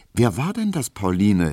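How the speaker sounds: very anxious, fearful and nervous. Emil Kubinke, startled by a man Pauline greeted, asks her: very anxious. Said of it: "fragte Emil Kubinke ganz ängstlich".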